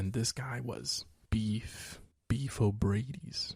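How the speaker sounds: slow, soft, hushed voice.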